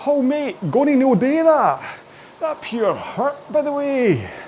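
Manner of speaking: put-on Scottish accent, pitched way up, slow. Voicing a complaining lower back: Scottish voice for lower back. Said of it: "Got a very Scottish lower back".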